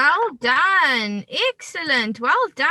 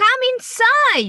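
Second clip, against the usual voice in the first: lively, excited exclamation, a little louder and higher; 9 semitones higher, 4 dB louder than usual. Reading an example sentence aloud before asking Aisha about its punctuation, voice raised a bit louder. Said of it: "You've raised your voice a little bit louder".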